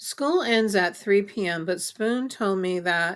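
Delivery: ordinary delivery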